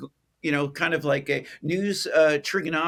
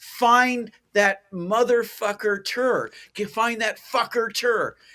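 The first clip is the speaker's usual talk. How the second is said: mock screaming, higher pitch, slower; 5 semitones higher than usual. Recounting news editors on two-way radios, imitating editors screaming. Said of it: "and they're screaming".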